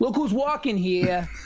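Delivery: put-on off-target New York accent. Speaker imagines what a protester was really saying: attempted New York accent. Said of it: "is it okay that I do that accent".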